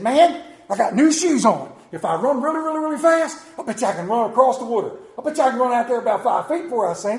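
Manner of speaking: loud, fast, cocky boasting, blurted out.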